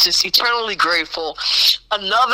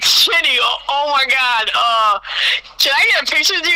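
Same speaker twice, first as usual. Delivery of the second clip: put-on flustered, excited stammer, much higher, slower; 6 semitones higher than usual. Recounting asking someone for a picture, retelling flustered stammering. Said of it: "I could barely get my words together".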